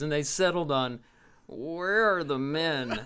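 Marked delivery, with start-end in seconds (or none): 1.5-3.0 put-on nasal smart-aleck villain voice, quieter, slower. Recounting a performer's bad guy voices, speaker quotes his line in a nasally smart-aleck voice. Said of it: "always in this nasally, smart aleck voice".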